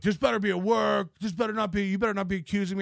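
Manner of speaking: put-on furious, enraged ranting outburst. Retelling how Gino reacted: imitating someone losing his mind. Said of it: "Gino lost his mind".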